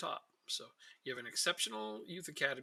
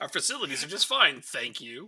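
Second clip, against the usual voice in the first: very loud, heavy sarcasm; 13 dB louder than usual. Reading a written reason aloud, heavily sarcastic. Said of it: "I had to read that with the sarcasm".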